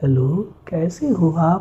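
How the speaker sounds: slow, honey-sweet, cute voice. Demonstrating how women's voices sound, with a sweet cute female voice. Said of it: "इस तरह से उनकी आवाज़ हो जाती है, बहुत क्यूट".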